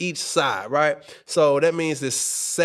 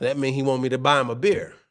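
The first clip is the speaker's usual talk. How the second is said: ordinary delivery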